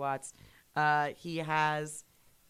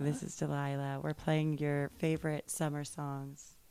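sultry, smoky late-night voice. Riffing on the late-night radio host, sultry Delilah radio-host voice. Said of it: "I've got that sultry smoker's voice".

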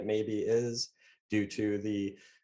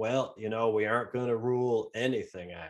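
put-on American Southern accent. Quoting what a man said when asked a question, in a Southern accent. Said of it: "Your Southern accent you gave him".

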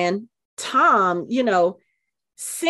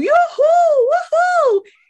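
high, loud, excited whooping yell.

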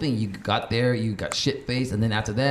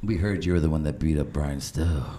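sleazy, low, put-on adult-film style voice; 6 semitones lower than usual. Retelling what the people at his friend's door said: porn-like voice. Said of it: "That sounded like some porn shit".

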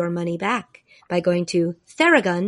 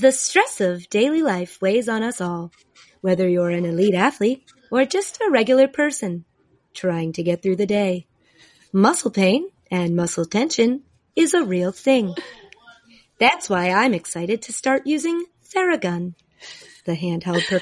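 even, automated recorded conference-line announcer voice. Asked to describe a product, the speaker does an automated conference-call voice. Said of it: "as if you were the automated voice on a conference call".

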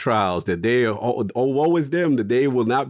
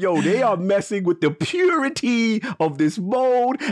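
mock passionate outrage, higher; 9 semitones higher than usual. Imitating another speaker's complaint about a game mode: imitating someone passionately outraged. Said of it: "the passion you coming from".

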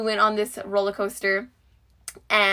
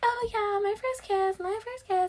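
imitated high, soft, giddy girly gush, pitched way up. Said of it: "and they're like".

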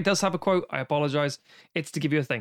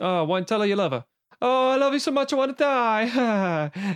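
put-on mocking teasing voice, higher; 7 semitones higher than usual. Retelling a film scene where Clemenza teases Michael on the phone: imitating Clemenza mocking. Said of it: "Clemenza's taking the piss".

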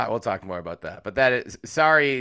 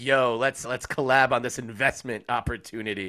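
usual speaking voice

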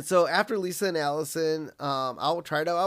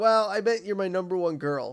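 half-hearted, grudging, grumbled tone; 3 semitones higher than usual. Retelling a cartoon scene where Marge answers Lisa: imitating a grumble. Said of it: "Marge kinda grumbles".

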